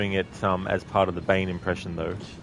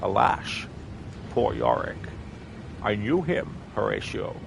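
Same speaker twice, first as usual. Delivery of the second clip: slow, bad put-on Scottish accent. Trying a Sean Connery voice that breaks down: bad Sean Connery impression. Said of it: "I can't really do a good Sean Connery".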